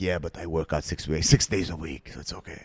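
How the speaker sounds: mimicked woman's smoker voice. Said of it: "she has a smoker's voice".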